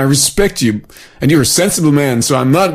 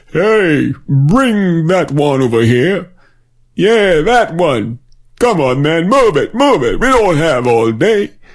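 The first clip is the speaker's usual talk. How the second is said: put-on urgent, insistent old man voice; 2 semitones higher than usual. Speaker imagines Noah giving his crew instructions: gray-haired Noah giving orders. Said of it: "I can just imagine gray-haired Mr. / I can just imagine gray-haired Mr. [name] giving his crew instructions. / I can just imagine gray-haired Mr. / I can just imagine gray-haired Mr".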